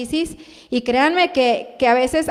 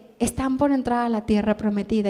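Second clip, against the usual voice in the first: gentle, delicate, soft, subtle, sweet, lovely voice; 3 semitones lower, 5 dB quieter than usual. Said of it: "esa voz preciosa, sutil".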